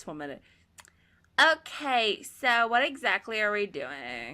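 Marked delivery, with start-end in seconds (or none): 1.4-4.3 put-on very loud, slow, drawn-out, swooping sing-song teen girl voice. Imitating a girl from high school and how she always talked: imitating a high school girl's voice. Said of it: "She sounded like this".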